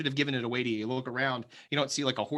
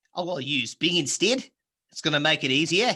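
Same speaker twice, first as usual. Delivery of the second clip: put-on Australian accent; 3 semitones higher, 6 dB louder than usual. A listener says this talk makes them think of the Outback: Australian accent. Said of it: "as soon as you start talking like that".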